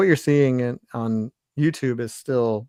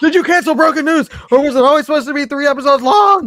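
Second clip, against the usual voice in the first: shrill, very loud, high shouting; 9 dB louder than usual. Reading a question aloud after being asked to: mock reading in all caps. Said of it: "read it like it's all caps".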